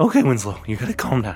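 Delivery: agitated muttering to oneself. In a role-play, the speaker's character talks to himself, agitated.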